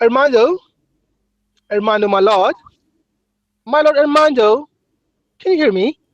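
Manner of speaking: fake mock English accent. Calling out to someone while pretending to be English, in a put-on English accent. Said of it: "So I'm English right now".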